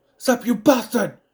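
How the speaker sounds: put-on very loud, hard yelling in a British accent. Show how a foreign actor loses his accent in Saw, as Cary Elwes yelling, accent turning British. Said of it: "It becomes a British accent when he starts yelling".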